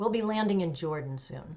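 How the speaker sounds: ordinary talk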